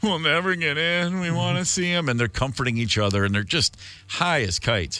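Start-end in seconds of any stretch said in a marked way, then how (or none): 0.0-2.1 put-on whimpering moan. Retelling a story about a high couple, imitating their whimpering.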